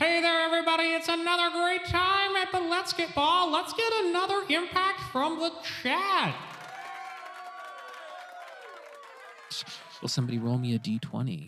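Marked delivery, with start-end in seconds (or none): 0.0-6.4 very high, crackly intercom-style announcer voice. Voice on the intercom opening the third round to everybody: crackly intercom announcer voice. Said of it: "the voice crackles onto the intercom again".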